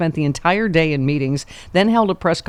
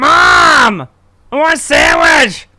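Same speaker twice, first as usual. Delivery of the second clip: very loud, very high, slow, shrill, drawn-out holler; 9 semitones higher, 9 dB louder than usual. Speaker acting out an arrested man calling to his mom in the next cell: imitating a yell to the next cell. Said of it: "She's just yelling into the next cell".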